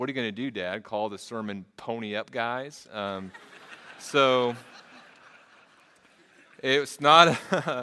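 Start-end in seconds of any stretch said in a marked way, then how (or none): none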